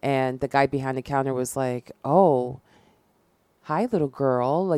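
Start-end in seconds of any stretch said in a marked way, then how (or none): 2.0-4.7 slow, raised, lingering creepy voice. Retelling what the guy behind the gas station counter said: imitating a creepy greeting. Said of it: "just real creepy".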